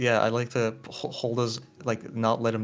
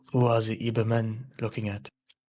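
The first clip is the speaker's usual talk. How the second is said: whispering very quietly, hushed. In a role-play game, a player whispers a question so others won't hear, very quiet whisper. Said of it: "very very quietly".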